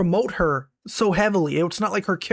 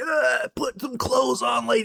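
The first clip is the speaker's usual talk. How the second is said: put-on higher-pitched grumpy old man voice, scolding. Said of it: "some old man who's like".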